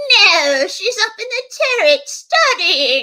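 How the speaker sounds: silly, high, loud storybook witch voice. Speaker retells her mom answering the door to a friend, ridiculous witch voice. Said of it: "my mom said in her ridiculous witch voice".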